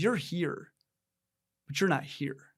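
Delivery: put-on flat, mock-deadpan delivery. Husband retells his wife's reply after he bragged to her, retelling wife's deadpan line. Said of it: "I was bragging to my wife".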